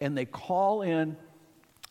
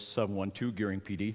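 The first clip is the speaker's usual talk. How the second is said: soft, professional, official radio voice; 7 semitones lower, 5 dB quieter than usual. Retelling own first radio call to dispatch: imitating own professional radio voice. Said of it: "I'll give you my professional voice".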